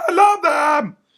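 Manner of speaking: very high, loud, shrill manic voice at full tilt. Describing reacting to a trailer, in a Pee-wee Herman on acid voice. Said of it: "Like that, in that in that exact same voice. ... Like kind of like Pee Wee Herman on acid".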